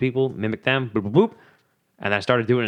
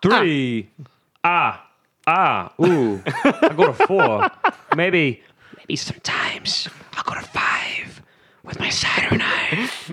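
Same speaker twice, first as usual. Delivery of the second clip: put-on vampire character voice; 5 semitones higher than usual. Performing a voice after being asked to do the Count: the Count voice. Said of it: "do the Count now".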